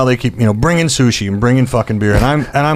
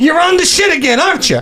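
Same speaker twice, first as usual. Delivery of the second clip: mock scream, higher pitch. Retelling how someone screamed an accusation across a bar: imitating someone screaming. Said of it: "screaming this at the top of his lungs".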